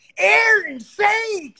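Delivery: high, loud, slow, drawn-out yell.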